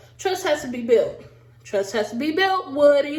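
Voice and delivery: ordinary talk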